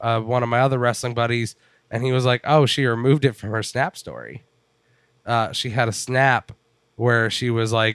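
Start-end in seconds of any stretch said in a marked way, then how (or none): none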